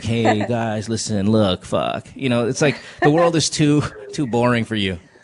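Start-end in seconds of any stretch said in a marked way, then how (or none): 0.0-2.1 slow, lazy, can't-be-bothered drawl. Teasing the other speaker about how hot girls talk: imitating a lazy way of speaking. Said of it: "that lazy way of speaking".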